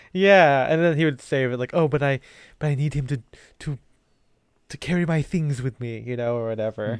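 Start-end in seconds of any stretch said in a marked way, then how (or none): 1.7-5.7 put-on, whiny cartoon boss voice. Acting out a cartoon character answering an interview question: Mr. Burns voice. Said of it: "It's almost like a Stewie impression".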